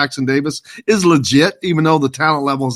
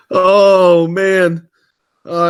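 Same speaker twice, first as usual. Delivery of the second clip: talking through loud helpless laughter, drawn-out "oh"; 4 semitones higher, 5 dB louder than usual. A broadcaster reacting to a remark on air, laughing while talking. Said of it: "I got to stop laughing".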